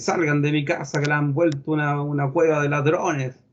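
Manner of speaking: plain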